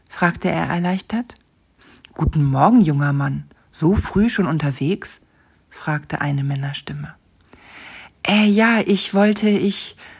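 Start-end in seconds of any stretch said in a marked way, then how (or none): 8.2-9.9 halting, high-pitched, broken-off stammer. Simon answers the man who greets him so early, stammering. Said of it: "stotterte Simon".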